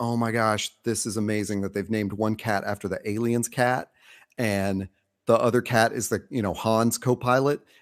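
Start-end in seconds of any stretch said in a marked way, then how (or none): none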